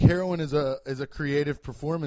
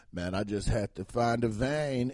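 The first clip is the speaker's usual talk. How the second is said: low, slow, tough, thuggish street-style drawl; 4 semitones lower than usual. Describing heroin users on an addiction show, imitating a thuggish way of talking. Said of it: "what are you talking like that for?".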